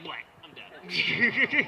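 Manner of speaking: swooping cartoon-style dying noise. Acting out dying with comic book sounds: comic-book death impression. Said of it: "that's my impression of dead".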